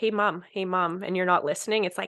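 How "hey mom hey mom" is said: put-on toddler voice, calling out. Comparing anxiety to a toddler nobody listens to: imitating a toddler calling mom. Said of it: "If a toddler's like".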